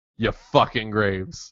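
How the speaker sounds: mild fake Boston accent. Quoting a speech to win a game: somewhat boston accent. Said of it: "I do it in the Boston, the s-, somewhat Boston accent".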